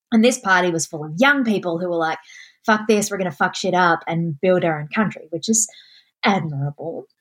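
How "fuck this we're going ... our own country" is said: ordinary talk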